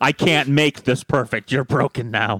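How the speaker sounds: creepy, sinister, menacing, scary voice. Recapping a story, quoting him after he finds her feet blistered, in a scary voice.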